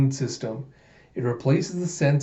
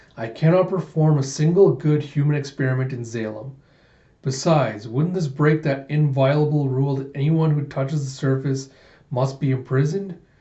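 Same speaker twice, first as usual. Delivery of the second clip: ordinary talk, nothing marked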